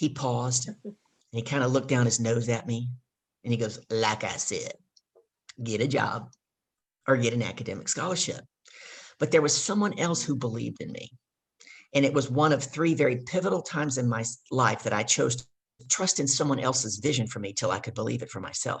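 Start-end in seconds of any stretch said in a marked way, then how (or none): 3.9-8.4 put-on deep voice, heavy Southern American accent. Retelling his father's reply to him, in a deep Southern accent. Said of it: "he's got a deep Southern accent".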